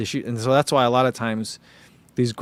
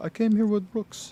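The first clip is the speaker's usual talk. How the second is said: soft, high, put-on Northern European accent; 9 semitones higher, 5 dB quieter than usual. Speaker retells his friend Johannes answering him in the booth: Northern European accent. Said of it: "That's my uh, Northern European accent".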